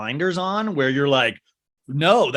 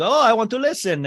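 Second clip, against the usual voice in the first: awful put-on Russian accent, pitched up; 8 semitones higher than usual. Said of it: "this is a horrible accent, you guys".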